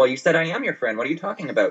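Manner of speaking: fast, shady, shifty-sounding tone. Recapping a scene where Summer cuts off Rosa, doing a mock-shady Summer impression. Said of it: "Summer is so shady".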